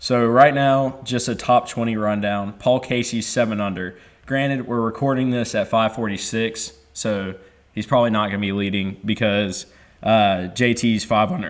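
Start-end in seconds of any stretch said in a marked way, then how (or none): 10.5-11.5 cracked, breaking voice. Speaker giving a golf leaderboard rundown, voice cracking. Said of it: "Voice crack of the century".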